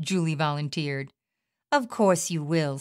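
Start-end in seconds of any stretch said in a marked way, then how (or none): 1.7-2.8 scornful, contemptuous sneering. One woman answers another's offer to move, with a sneer. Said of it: "sneered Debbie".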